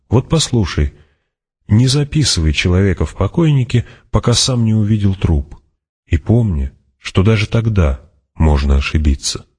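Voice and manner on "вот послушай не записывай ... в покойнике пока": plain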